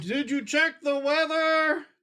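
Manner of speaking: yelling out. Calling out in character from high in the air: yelling out. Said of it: "I'm gonna yell out something stupid like".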